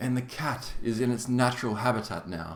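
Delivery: British nature documentary narrator voice. Explaining who a famous documentary maker is: David Attenborough impression. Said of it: "he's like".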